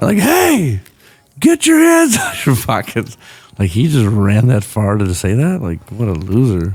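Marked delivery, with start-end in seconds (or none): 0.2-3.2 put-on very high, bossy, swooping yell. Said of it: "You just yell at anyone".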